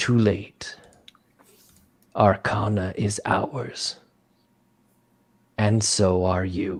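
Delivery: deep, low, rumbling pronouncing voice. Storyteller voicing a being that addresses the listener, low rumble. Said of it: "it says to you in a low rumble".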